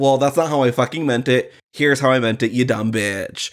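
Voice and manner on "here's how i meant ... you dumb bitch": normal talking voice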